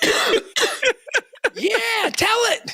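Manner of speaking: very high-pitched, excited shout. Speaker on stage retells mom calling out, imitating mom's excited yell. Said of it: "She's like yelling, all excited".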